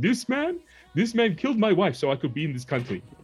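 dumb high put-on voice. Retelling a joke to a stripper at a party: stupid put-on voice as Eddie Murphy. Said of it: "put this stupid voice on".

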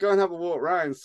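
put-on smug, self-satisfied tone. Retelling what two people said at an estate sale: imitating a smug tone. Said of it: "sort of with this smug little".

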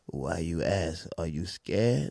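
play-acted, very low, very quiet, drawn-out dramatic taunt. Retelling how a guy answered your question about his tattoo, in mock-dramatic delivery. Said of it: "He's all dramatic".

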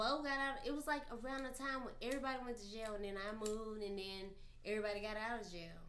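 speaking very quietly and softly.

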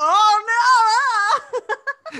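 shrill, very high, very loud, drawn-out cry. Laughing with another speaker, recounting how a man reacts: imitating someone yelling. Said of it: "that he's yelling like".

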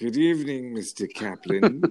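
put-on villain voice. Quoting a villain from North by Northwest: James Mason voice. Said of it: "my James Mason".

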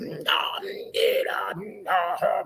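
very slow, drawn-out preaching cadence. Mocking how some talk once they start preaching: imitating a preacher voice. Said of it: "when they start preaching".

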